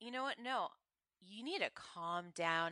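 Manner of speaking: low, quick, hushed voice. Retelling what a woman said to calm someone in a fight, imitating her low voice. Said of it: "she's using this low voice".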